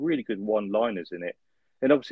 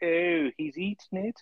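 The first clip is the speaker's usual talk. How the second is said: pitched-up fake posh accent; 9 semitones higher than usual. Mimicking the vet from an 80s TV show; fake posh accent. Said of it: "the vet's kind of the same".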